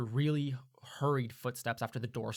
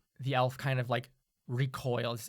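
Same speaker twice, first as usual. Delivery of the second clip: normal talking voice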